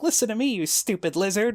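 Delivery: very high, bitchy, sarcastic voice. Retelling a game scene where Rin answers Arok; mock-sarcastic, bitchy Rin voice. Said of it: "Rin sounded sarcastic and bitchy".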